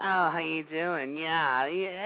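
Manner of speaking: soft, slow, put-on effeminate voice. Speaker mocks how someone talks, mocking effeminate voice. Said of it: "talk like this".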